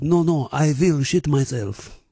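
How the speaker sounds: mock male French accent. Retell a player's answer to the umpire who accused him of cheating, in a put-on French voice. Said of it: "in his French voice".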